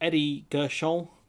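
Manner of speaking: name pronounced the French way, with French accent. Pronouncing a person's name for comic effect: name said with French accent. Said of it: "it's funnier to pronounce it like he's French".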